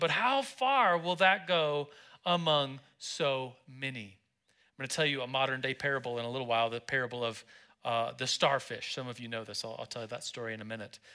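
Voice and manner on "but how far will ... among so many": mock sarcasm, very slow, dragged out. Reading a disciple's doubting words about the small loaves: imitating a sarcastic tone. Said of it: "a tone of sarcasm".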